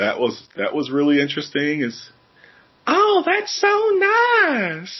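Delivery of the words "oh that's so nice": put-on very high, slow, drawn-out southern belle accent. Describing the many people with southern accents: southern belle accent. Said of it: "speaking like a southern belle".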